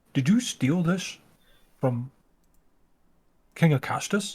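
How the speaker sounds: earnest, solemn, very serious and grave tone. A game narrator voices one character questioning another: very serious tone. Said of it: "says in a very serious tone".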